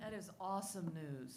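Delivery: sarcastic, very quiet, under the breath. Reacting to news that schools stay closed through summer: sarcastic. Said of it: "She says sarcastically".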